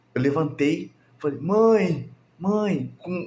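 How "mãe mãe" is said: put-on high, childlike calling voice, like a small kid. Retelling waking up and calling for his mother, sounding just like a child. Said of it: "igualzinho uma criança".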